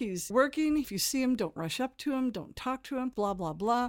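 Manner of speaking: mock, loud, stern strict teacher voice. Retelling escorting puppeteers past an actor: retelling own strict teacher talk. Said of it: "the whole teacher talk".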